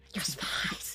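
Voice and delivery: hushed voice. Voicing a character after being asked to keep it down: whispering. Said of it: "He starts whispering".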